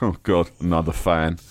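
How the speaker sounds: smug, self-satisfied, offhand throwaway tone. Imitating people receiving compliments: imitating a smug shrug. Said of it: "they just kind of shrug smugly and go".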